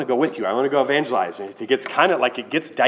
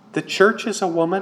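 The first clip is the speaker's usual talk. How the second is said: put-on small child's high voice, speaking up; 7 semitones higher than usual. Quoting the speaker's son speaking up to a ranting woman, in his little voice. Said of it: "he just speaks up with his little voice".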